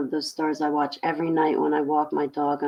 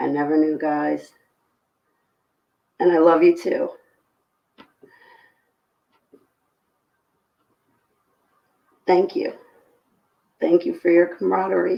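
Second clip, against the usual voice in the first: loud, tearful crying pushed through the words; 2 semitones higher, 5 dB louder than usual. Thanking the group, the speaker says they can't stop crying. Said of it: "that's why I can't stop crying".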